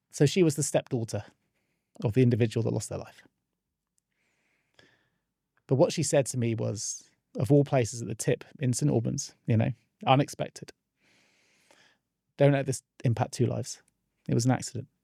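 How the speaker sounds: emotional voice, struggling to stay composed. Retelling a meeting with the stepdaughter after the accident: getting emotional, holding it together. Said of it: "I'm gonna get emotional, I've got to hold myself here".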